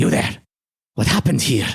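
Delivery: swooping, reptilian lizardfolk creature voice. Voicing a lizardfolk with dynamite who questions the players: lizardfolk creature voice. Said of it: "the guy with the dynamite says".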